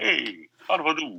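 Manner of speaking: put-on Greek accent sounding Italian. Trying out a put-on accent he admits he can't do: bad put-on Greek accent. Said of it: "a racist Greek accent, but I don't even know one".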